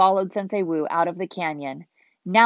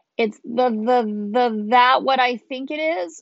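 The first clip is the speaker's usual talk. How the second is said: anxious, nervous, high-pitched, words stretched out; 6 semitones higher than usual. Cole faces a huge dragon rising before the ninja, asking nervously. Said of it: "Cole asked nervously".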